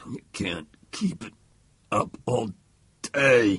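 loud, halting, broken-up words through gritted teeth. Narrator voicing one man in a knife standoff speaking to the other: through clenched teeth. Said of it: "said between clenched teeth".

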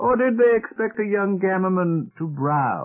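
heavy teasing humor. An elder adds a follow-up question to a traveler, with heavy humor. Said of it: "With heavy humor, he added".

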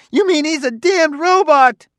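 high-pitched, shrill, loud screaming shriek. Narrating a man retorting to someone who called another man his partner: shrieking. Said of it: "shrieked Klusar".

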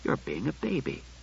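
hushed and tender, very quiet. Bailey, speaking before his voice hardens, tender. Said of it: "he said tenderly".

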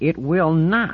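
very high-pitched, nearly yelling. Marlena answers the one insisting on the brain scan, practically shouting. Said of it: "practically shouting".

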